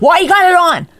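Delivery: very high, shrill, loud, cross and angry voice. Imitating the co-host questioning her makeup: imitating partner's angry question. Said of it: "You're always, like, angry".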